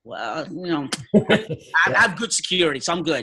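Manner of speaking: put-on chuckling, laughing, breezy and reassuring. Retelling laughing off family worries about a mission trip: retelling a laughing reply. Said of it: "So I just laughed at him".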